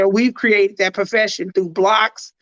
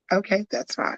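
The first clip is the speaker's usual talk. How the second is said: subtle soft, breathy, gentle tone, near a whisper; 9 dB quieter than usual. Showing the other speaker how a reply sounds: subtle soft tone. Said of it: "my subtle soft tone".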